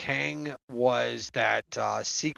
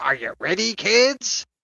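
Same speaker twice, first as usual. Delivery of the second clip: cartoon pirate voice, high and stretched out; 5 semitones higher, 3 dB louder than usual. Imitating the pirate from a SpongeBob scene: SpongeBob pirate voice. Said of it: "that scene from SpongeBob SquarePants with that pirate going like".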